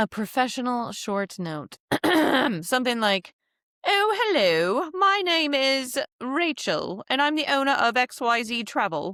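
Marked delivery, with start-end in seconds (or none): 3.9-9.1 put-on British accent laid on for show, pitched up. Drafting a professional short email note, british accent. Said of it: "We're not going to do the British accent today. Well, let's do it".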